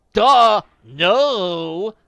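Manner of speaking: very loud, shrill, snotty outburst with long drawn no. Answering the other character's question, in a snotty voice. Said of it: "Beach said in a snotty voice".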